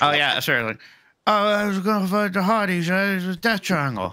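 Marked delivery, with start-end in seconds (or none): 1.3-4.1 quick bit of put-on English accent. Performing an accent after being asked for a bit: english accent. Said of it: "give a bit of English".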